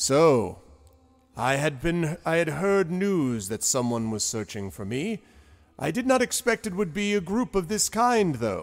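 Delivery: serious giant voice. Voicing a huge giant who looks down at the party: serious giant voice. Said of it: "looks down at you all very seriously and, uh, says".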